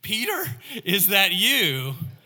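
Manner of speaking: high, loud, disbelieving, drawn-out tone. A woman on the phone, hearing Peter answer, asks incredulously. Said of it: "asked incredulously".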